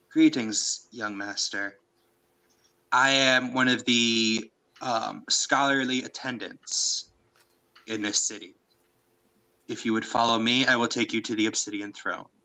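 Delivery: mechanical, feminine robot voice. Voicing a scholarly automaton greeting a player: feminine but mechanical voice. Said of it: "in a very feminine but mechanical voice".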